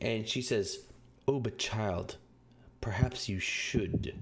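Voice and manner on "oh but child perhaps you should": menacing, threatening tone. Voicing an elf who leans toward the group: menacing. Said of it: "leans towards you, you all menacingly".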